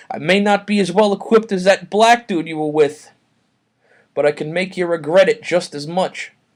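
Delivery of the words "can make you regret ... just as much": ordinary talk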